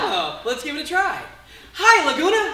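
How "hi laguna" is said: loud, high, panto-style call-out yell. Coming on stage and greeting the audience so they shout back, yelling out a greeting. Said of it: "I'm gonna yell out".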